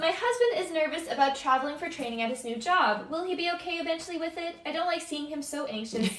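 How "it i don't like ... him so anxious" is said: ordinary talk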